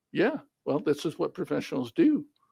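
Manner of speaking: usual speaking voice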